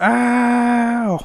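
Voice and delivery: high, drawn-out cartoon scream, "ow" stretched out. Recalling the cartoon scream after a brick hit: Tom the cat scream. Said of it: "Like a cartoon scream".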